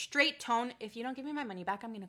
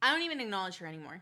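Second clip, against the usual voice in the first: ordinary talk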